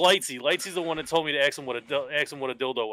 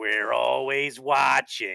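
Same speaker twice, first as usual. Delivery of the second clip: character voice, slightly deeper than normal. Recounting a game where you made a kid laugh, speak in a Roz voice, a little deeper. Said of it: "I sounded like Roz from Monsters Inc".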